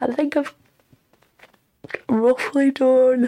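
mid-yawn. Talking about a book still to format, yawning. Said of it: "I'm yawning my head off".

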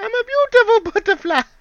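high-pitched, loud squealing. Picturing a game character running with that line: Bug's Life caterpillar voice. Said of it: "running down with that voice".

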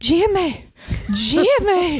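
high, loud, passionate put-on toddler voice.

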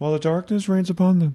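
high, mumbled under-the-breath mutter. Retelling what a church-going woman said, muttered under her breath. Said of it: "she kind of said it almost like under her breath".

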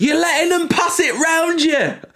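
acted-out, very high-pitched, shrill heckling shout. Retelling what a fan a few rows behind shouted during the game: imitating a fan shouting. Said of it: "who just shouts".

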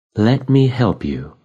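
gentle, soft-spoken, soft tone. After a menu lights up on the table, she speaks in a soft voice. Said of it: "her voice soft".

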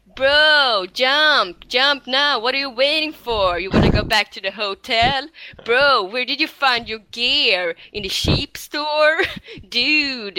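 exaggerated, grating, drawn-out, super annoying dude-bro voice. A speaker acting out what another person says, imitating a super annoying voice. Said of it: "det är verkligen en superjobbig röst".

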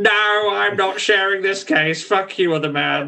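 high, drawn-out puppet voice. Imitating a police character as Zippy from Rainbow: Zippy voice. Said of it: "the Zippy of police work".

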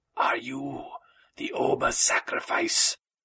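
hissing, serpent-like dragon voice. Reading a dragon's question to a messenger, in a hissing dragon voice. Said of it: "The dragon spoke in a hissing voice".

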